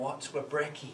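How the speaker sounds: ordinary delivery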